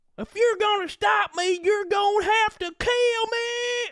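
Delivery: very high, badly faked put-on Southern accent. Mocking the accent of a character everybody loved: fake bad Southern accent. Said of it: "she sounds like a person faking a bad Southern accent".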